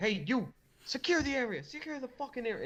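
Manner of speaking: shrill, very high, barked delivery. Voicing a man in a game scene who starts directing others, barking orders. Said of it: "he starts barking orders".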